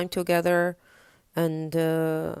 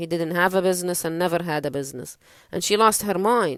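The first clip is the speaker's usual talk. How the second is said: ordinary talk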